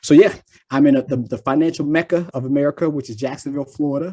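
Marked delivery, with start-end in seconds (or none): none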